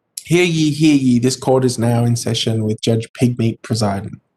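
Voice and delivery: normal talking voice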